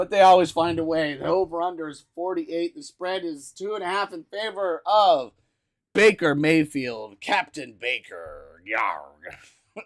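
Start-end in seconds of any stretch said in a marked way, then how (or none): 7.2-9.8 pirate talk in a very low put-on voice. Giving a football player a pirate name while previewing a game; pirate voice. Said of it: "I like your pirate".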